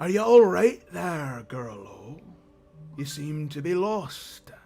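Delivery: gruff, rough-sounding, loud voice. Storyteller voicing a stranger who finds a lost girl, in a gruff voice. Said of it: "gruff voice reply".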